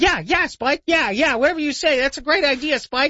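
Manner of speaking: very high, eager, fawning yes-man voice. Imitating a dog that agrees with everything: impression of a fawning AI dog. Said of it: "You like that impression".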